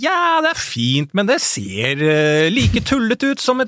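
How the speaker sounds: mock, high-pitched gushing delivery.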